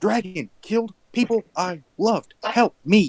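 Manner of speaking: shouted out loud with full, raw force. Playing a game character who yells back when another character yells, yelling. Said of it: "I just yell".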